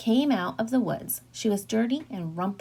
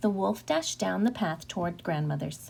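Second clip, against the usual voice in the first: ordinary delivery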